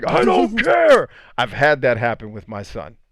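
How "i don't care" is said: shrill, very high, loud yell. Retelling a scene where Atreus screams and Kratos yells back: retelling Kratos yelling. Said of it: "Kratos yells back".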